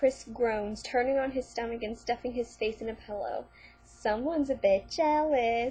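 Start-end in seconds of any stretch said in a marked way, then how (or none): 3.8-5.7 swooping, singsong tune. Reading a story aloud, a character teases another: sing-song voice. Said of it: "Darren says in a sing-song voice".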